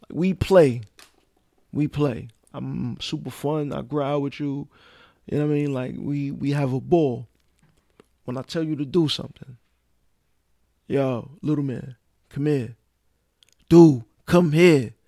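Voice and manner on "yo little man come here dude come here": firm, stern, no-nonsense fatherly tone. Retelling calling a young son over: imitating own stern voice. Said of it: "my voice".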